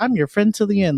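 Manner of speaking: little, high-pitched, small doll voice. Retelling a scary movie doll's line: imitating Chucky's little voice. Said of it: "he does a little voice thing where it's like".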